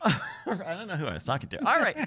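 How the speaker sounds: usual speaking voice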